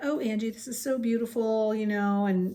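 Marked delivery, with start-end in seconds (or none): 0.0-1.7 imitated sweet girl's voice. Retelling a classmate's reaction to a gift: imitating a sweet girl. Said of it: "And she was so sweet".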